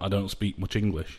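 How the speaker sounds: normal talking voice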